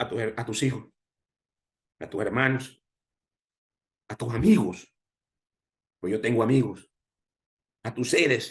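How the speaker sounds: choked up, voice cracking and breaking with emotion. Speaker answering an interviewer's question, admits it is not easy: voice breaking with emotion. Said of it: "se me quebra la voz".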